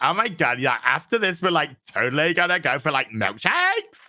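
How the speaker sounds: put-on California Valley Girl speech. Mocking how a writer's Superman sounds, in a Valley Girl voice. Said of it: "sounds like some in Valley Girl from California".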